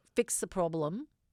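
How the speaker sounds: ordinary delivery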